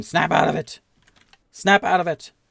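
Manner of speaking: loud, rough, high-pitched shout. Voicing a guard trying to hit an ally with the flat of the blade: shouting. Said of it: "he's shouting".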